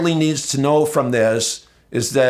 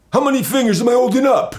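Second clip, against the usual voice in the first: high-pitched New Jersey voice; 10 semitones higher than usual. Retelling a courtroom scene, quoting a man holding up fingers: imitating a Jersey voice. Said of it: "So he uses that Jersey voice".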